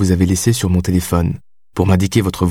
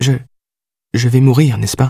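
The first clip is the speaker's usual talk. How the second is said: high, tremulous, quavering, trembling voice; 5 semitones higher than usual. Narrator reads her question to Clouseau in a trembling voice. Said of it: "demanda-t-elle d'une voix tremblante".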